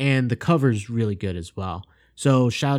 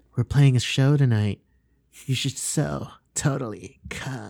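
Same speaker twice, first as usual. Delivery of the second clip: exaggerated, over-the-top sexy, sultry voice. Imitating a movie character talking to Scott: imitating an over-the-top sexy voice. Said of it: "super, like, sexy voice".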